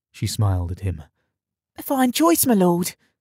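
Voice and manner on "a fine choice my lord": whispering, much higher. Reading a story, a girl answers her lord, whispering back. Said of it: "she whispered back".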